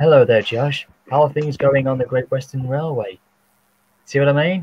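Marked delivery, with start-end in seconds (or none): 0.0-3.2 completely innocent-sounding character voice. Showing how the character's innocent voice sounded: innocent Timothy voice. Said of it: "that's my innocent Timothy voice".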